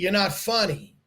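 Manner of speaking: ordinary talk, nothing marked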